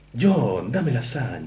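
put-on deep cartoon-cat voice. Recalling the Latin Spanish dub from childhood, quoting the cat in Garfield voice. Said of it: "Garfield de la voz grave".

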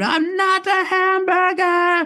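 put-on shrill, very high, very slow, drawn-out scream. Telling how you tried to make Stuart laugh by Klaus's dressing room, retelling a scream. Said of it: "So I screamed".

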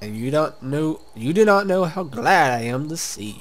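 loud, booming, very slow wizard voice. In a game, the wizard greets the marked one: Zandalore wizard voice.

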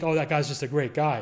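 usual speaking voice

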